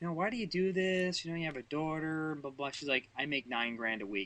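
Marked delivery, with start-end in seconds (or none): 0.1-2.7 put-on camp voice, much higher.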